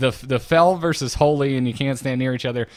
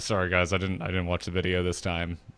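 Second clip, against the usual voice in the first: put-on guilty, sheepish tone; 6 semitones lower, 7 dB quieter than usual. Retelling the raid leader's apology before the fight: imitating Civ's guilty voice. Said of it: "I could just hear the guilt in his voice".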